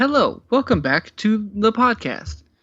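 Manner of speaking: high, formal professional lawyer phone voice. Opening the podcast episode in a formal lawyer-on-a-phone-call voice. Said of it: "Are we someone's lawyer on a phone call?".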